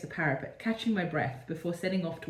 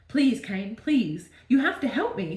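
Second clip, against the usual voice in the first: begging, pleading, higher and louder; 4 semitones higher, 5 dB louder than usual. Reading aloud own old story, the narrator begs Cain for help: begging. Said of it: "I begged".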